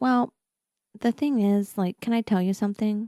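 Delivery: nervous, uncertain, confiding tone. Retelling how she asked before confiding something: imitating someone speaking nervously. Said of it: "she kinda nervously says".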